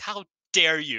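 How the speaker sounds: play-acted, very loud, high, visceral outraged cry. Retelling a commentator's call during a match: imitating visceral outrage. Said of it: "got real visceral about it".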